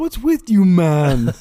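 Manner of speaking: very loud, booming, drawn-out put-on Jamaican accent. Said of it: "What are you trying to imitate, like, a Jamaican voice?".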